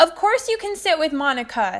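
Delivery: put-on loud, high voice projected to carry. Narrator answers Simon so Monica will hear, responded loudly. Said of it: "I responded loudly so she'd hear".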